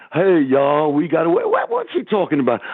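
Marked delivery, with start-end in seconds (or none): 0.1-1.3 put-on slow Southern American drawl. Mimicking a coach the speaker hears talking, imitating a southern accent. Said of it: "You hear him with his southern accent".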